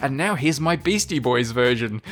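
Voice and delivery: ordinary talk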